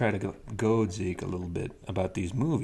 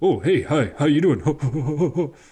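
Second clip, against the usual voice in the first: very slow, high, loud, stretched-out "hello"; 6 semitones higher, 8 dB louder than usual. Showing another speaker a quick Robin Williams impression. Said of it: "Let's hear your best Robin Williams".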